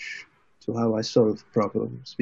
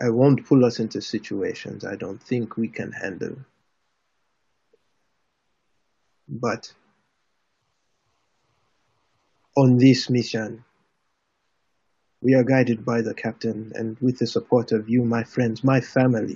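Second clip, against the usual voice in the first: hardened, firmed-up, steeled delivery. Voicing a character answering a friend's rebuke at the table: toughened demeanor. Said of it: "he toughens his demeanor again, and he goes".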